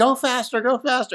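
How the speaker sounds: very high, urgent scream. Retelling a back-seat passenger urging the driver on: imitating someone screaming.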